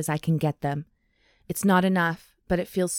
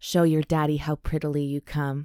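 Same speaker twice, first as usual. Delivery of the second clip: low, sinful, wicked voice; 2 semitones lower than usual. Reading a romance scene aloud, a man leaning in: low and sinful voice. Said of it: "his voice low and sinful".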